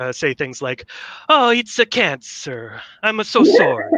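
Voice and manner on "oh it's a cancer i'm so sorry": exaggerated Italian accent. Joking about Dr. Mario at a serious medical procedure, in a super racist Italian accent. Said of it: "with that super racist Italian accent".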